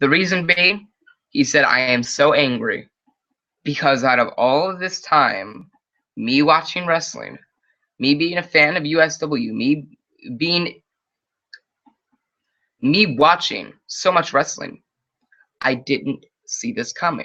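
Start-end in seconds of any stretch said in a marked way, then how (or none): none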